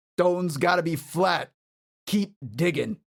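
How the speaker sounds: man's voice, barked out forcefully. Describing what the player overhears, voicing a man: man yelling orders. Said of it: "some man yell".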